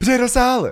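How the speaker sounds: bright, cheerful tone. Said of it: "She's so cheery about it".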